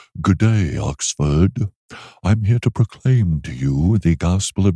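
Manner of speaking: haughty, snooty British accent, pitched very low. Imagining being invited to preach at Oxford, snooty British accent. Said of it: "spoke as if I were British with a really snooty attitude".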